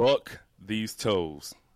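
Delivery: slow, loud, deliberate, word-by-word delivery. Podcast host opening the show, saying a phrase slowly. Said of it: "let me say this slowly".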